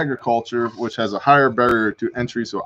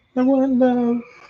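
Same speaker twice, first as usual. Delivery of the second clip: put-on very high, squeaky teen voice, cracking; 13 semitones higher than usual. Trying out a voice for a character who wants love: squeaky teenager voice cracking. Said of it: "the squeaky teenager. His voice is changing".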